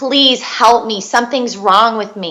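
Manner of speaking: put-on desperate, pleading tone. Retelling begging nurses for help in hospital: retelling own desperate begging. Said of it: "And I'm begging, begging nurses".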